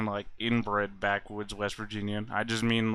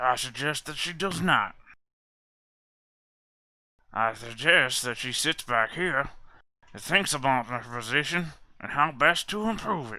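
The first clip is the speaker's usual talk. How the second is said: ogre character voice; 4 semitones higher than usual. In an acted scene, responding about a young woman's date, in an ogre voice. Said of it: "is that how all the ogres and ogre empire talk?".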